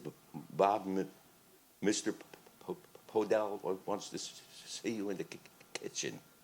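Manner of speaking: catching and halting on the first sound of each word. Retelling the sound man's calls: imitating Doug stuttering. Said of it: "And Doug stuttered".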